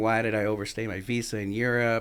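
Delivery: normal talking voice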